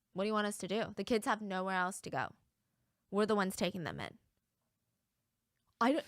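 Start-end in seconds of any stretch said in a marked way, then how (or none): none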